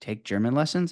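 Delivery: ordinary talk, nothing marked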